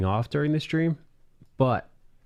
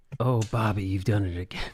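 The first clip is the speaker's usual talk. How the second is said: sleazy, lecherous, creepy voice; 2 semitones lower than usual. Joking about a fan of a TV painter, speaker says this in a pervert voice. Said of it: "Pervert voice".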